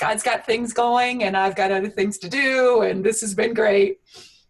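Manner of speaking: high, loud, breezy, upbeat, dismissive tone.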